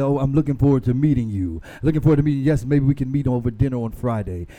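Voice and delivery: fake, put-on deep man's voice. Acting out a man met online talking: put-on deep voice. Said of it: "this man talking with a certain deep voice".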